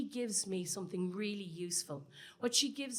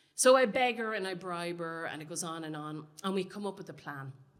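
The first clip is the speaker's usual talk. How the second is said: usual speaking voice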